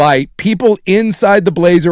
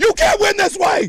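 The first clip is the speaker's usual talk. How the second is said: acted sharp gasp, then a very high yell; 3 dB quieter than usual. Replaying own yell after being told of the wind-up: re-enacting own excited yell with gasp.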